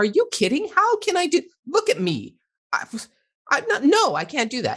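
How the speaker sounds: put-on, very high, swooping snapped-back outburst. Retelling snapping at a three-year-old who asked to play: imitating snapping at someone. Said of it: "And I snapped at him".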